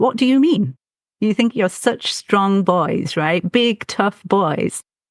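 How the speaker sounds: stern, harsh tone in broken English. Retelling how her mother confronted the boys: retelling a scolding in broken english. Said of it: "telling them off in broken English".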